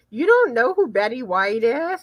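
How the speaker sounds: normal talking voice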